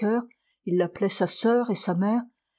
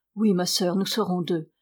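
ordinary delivery, nothing marked

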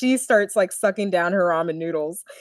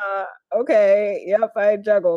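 dry, unimpressed, flat and slow deadpan. Retelling Zuko admitting he juggled: imitating Zuko's deadpan. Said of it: "he looks so deadpanned with his arms folded".

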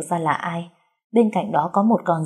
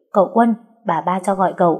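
ordinary delivery

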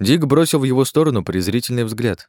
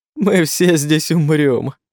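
high, slow whining. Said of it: "Хватит ныть!".

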